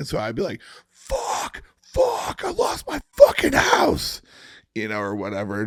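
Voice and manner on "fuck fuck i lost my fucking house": high, shrill, loud, drawn-out all-out scream. Recalling recording takes where they were told to really lose it, retelling a full-lungs scream. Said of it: "just screaming at the top of my lungs".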